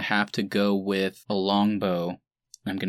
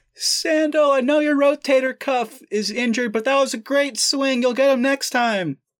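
very high, loud call shouted from afar; 7 dB louder than usual. A narrator voices Brief calling up to a player on a distant ridge, yelling from far away. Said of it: "He's like yelling because you're kind of far away".

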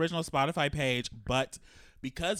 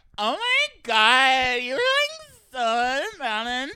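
put-on shrill, very high, loud, swooping, drawn-out drunk party girl; 12 semitones higher, 9 dB louder than usual. Playing a bachelorette girl praising a performer, drunk bachelorette voice. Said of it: "Be a bachelorette girl".

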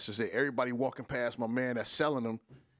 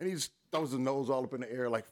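ordinary delivery

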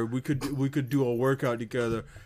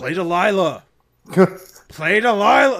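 mock drunk belligerent yelling, much higher and louder; 6 semitones higher, 9 dB louder than usual. Retelling a drunk man at a show yelling at the band, imitating drunken yelling. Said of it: "drunk, belligerent, just yelling this at the band".

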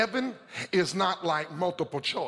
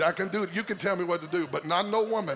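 normal talking voice

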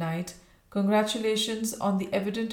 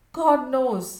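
troubled, unsettled, agitated, high, raised voice; 5 semitones higher, 6 dB louder than usual. A colonel answers a woman's startled question in an agitated voice. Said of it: "he said in an agitated voice".

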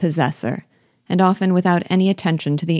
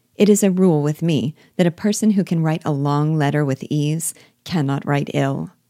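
plain

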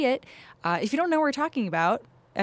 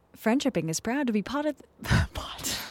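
fake, played-up, put-on British accent; 4 semitones higher than usual. Reading the show's opening line: put-on British accent. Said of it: "I like your British accent".

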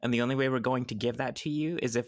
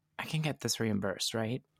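hushed, quiet half-whispered voice; 4 dB quieter than usual. Playing a character who just paid 2,000 up front, aside to a companion: half-whispered aside. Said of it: "he whispers to Space Dumpster".

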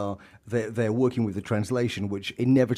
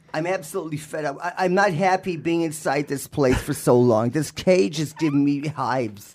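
high, loud, unruly American bird voice; 5 semitones higher, 5 dB louder than usual. Asked to voice Paulie as an American disobedient bird; Paulie the bird voice. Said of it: "Can you do it as an American disobedient bird".

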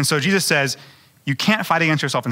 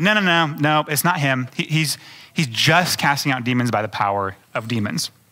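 ordinary talk, nothing marked

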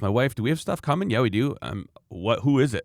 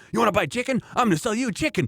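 put-on very high, mad, angry voice; 11 semitones higher than usual. Retelling how dad answers spam callers: imitating an angry dad. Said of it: "he just gets so mad".

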